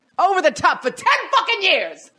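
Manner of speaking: put-on loudest yell, very high, booming and swooping. Retelling a line from rehearsal, loudest: imitating Matt Perry shouting loudly. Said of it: "Like, the loudest".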